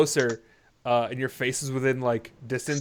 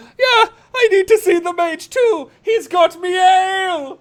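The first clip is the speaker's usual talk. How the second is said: put-on very high, loud drunken voice; 10 dB louder than usual. Voicing a drunk person shouting from the corner: drunk person voice. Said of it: "you hear a drunk person go".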